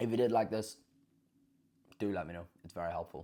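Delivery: chewing while speaking, mouth full. Podcast host asking listeners for feedback, talking while eating. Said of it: "sorry, I'm just eating this orange".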